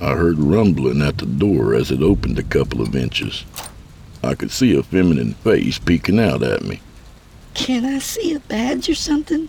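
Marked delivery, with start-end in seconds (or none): 7.5-9.5 frightened, fearful, very high-pitched voice. A woman peeking through a barely opened door speaks to a stranger, in a fearful voice. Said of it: "Came her fearful voice".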